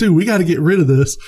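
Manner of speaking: frantic, panicked, freaking-out voice. Retelling a movie scene, imitating Mark Wahlberg freaking out. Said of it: "Mark Wahlberg's freaking out".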